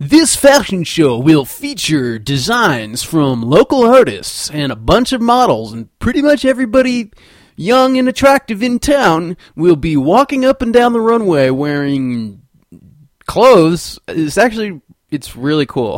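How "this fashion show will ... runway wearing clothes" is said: loud, swooping, goofy, sarcastic announcer voice. Promoting a local fashion show, in a goofy, sarcastic announcer voice. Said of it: "goofy, sarcastic announcer voice that I was doing".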